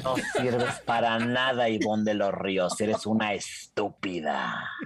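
very low, scary, threatening acted tone, laugh slipping in. Repeating the insult a man said when he blocked her, mock-scary insult. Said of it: "decir la frase que me dijo cuando me bloqueó".

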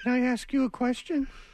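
calling out. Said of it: "she'll go".

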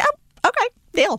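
very high eager voice. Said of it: "I was like".

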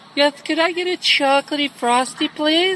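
fake, heavily effeminate put-on delivery. Ordering a frosty as a prank, in a put-on effeminate voice. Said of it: "I put on this real effeminate voice".

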